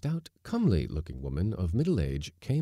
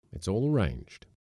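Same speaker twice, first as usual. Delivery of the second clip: ordinary delivery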